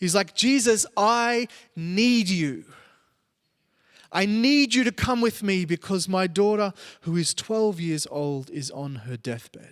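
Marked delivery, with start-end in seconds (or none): 0.3-6.7 put-on begging, pleading voice. Retelling a father begging Jesus to come: imitating Jairus pleading. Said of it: "he starts pleading with Jesus".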